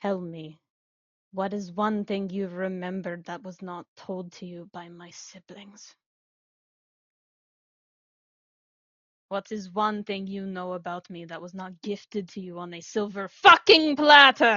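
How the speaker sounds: malevolent tone. Voicing a character confronting Juliet, gaze snapping to her: full of malice. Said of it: "full of malice".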